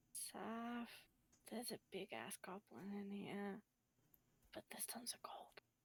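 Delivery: hushed, very quiet whisper. Whispering to saf in character about a goblin and gold: whispering in character. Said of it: "I'm gonna whisper what's going on".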